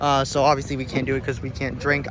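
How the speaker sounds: ordinary talk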